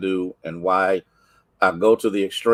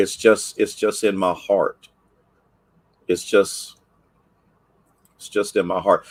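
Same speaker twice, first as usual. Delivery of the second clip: voice fighting back tears. Speaker addressing Jaleesa and the people on the snap, holding back tears. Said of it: "I'm trying not to".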